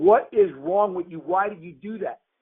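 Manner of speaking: bewildered, heated, screaming delivery. Retelling screaming at a man who just sat there, retelling a scream. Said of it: "and I'm screaming at him".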